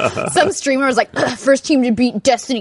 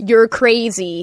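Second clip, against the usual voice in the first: imitated American accent. Retelling how Dan gives voice commands to the Xbox, imitating Dan's American accent. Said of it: "like his American accent".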